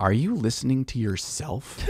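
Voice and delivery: put-on very accusatory, soft, pointed tone. Retelling how his wife comes down to his work desk, in a mock-accusatory tone. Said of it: "In a very accusatory tone of voice".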